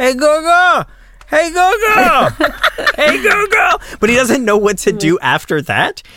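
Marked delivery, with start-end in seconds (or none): 0.0-3.8 put-on very high, slow, drawn-out little-kid holler. Retelling how Junior yells from the kitchen, imitating Junior yelling.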